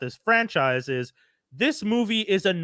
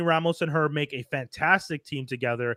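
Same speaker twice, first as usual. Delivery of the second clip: ordinary talk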